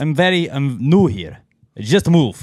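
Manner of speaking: put-on high-pitched Transylvanian vampire-style accent. A newcomer, asked whether he hangs out here, answers in a Transylvanian accent. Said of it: "What's with this Transylvanian accent?".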